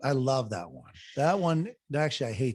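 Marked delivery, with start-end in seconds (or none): 0.0-0.9 gushing, plainly sarcastic, fake enthusiastic tone. Answering about the dreaded paper loss: sarcastic, pretending to love it. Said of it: "That was a little sarcastic".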